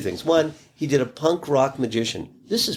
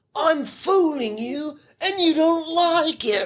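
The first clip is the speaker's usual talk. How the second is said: very high, combative, aggressive jab. Recalling a magician turning to his audience after a trick, retelling an aggressive taunt. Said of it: "he'd turn to the audience very aggressively and say".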